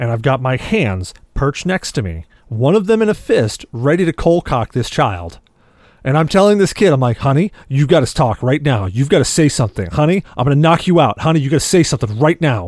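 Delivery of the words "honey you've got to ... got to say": mock alarmed, pressing, urgent tone. Retelling urging a laughing child to say something, re-enacting an alarmed plea. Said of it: "I am getting extremely alarmed".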